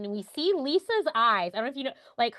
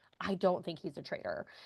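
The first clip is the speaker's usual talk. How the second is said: mock-muttered, much quieter; 5 semitones lower, 8 dB quieter than usual. Speaker retells a woman's remark, imitating her muttering under her breath. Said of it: "says under her breath".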